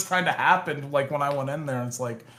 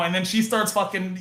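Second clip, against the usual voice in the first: normal talking voice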